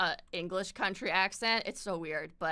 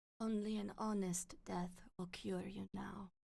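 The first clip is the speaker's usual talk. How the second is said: put-on accented noble lady voice; 11 dB quieter than usual. Reading out a quote while imitating Lady Maria: Lady Maria voice. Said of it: "Lady Maria quotes".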